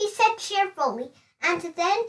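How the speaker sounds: plain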